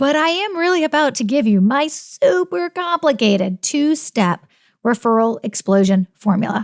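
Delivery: dry, heavy, tongue-in-cheek sarcasm. Announcing the episode's two-step referral formula to listeners: sarcastic. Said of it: "can you hear the sarcasm?".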